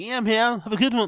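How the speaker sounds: very high, loud, matey blokey lad voice. Mocking how Chin talks to other guys, in his lad voice. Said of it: "this lad voice that Chin does when he's talking to other guys".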